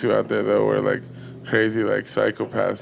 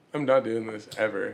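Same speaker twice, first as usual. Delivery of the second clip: normal talking voice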